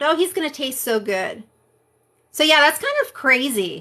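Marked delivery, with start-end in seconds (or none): 0.0-1.4 put-on giggling through the words. Retelling how she laughed right after crying over her friend, imitating laughing while talking. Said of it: "she's like laughing about the fact".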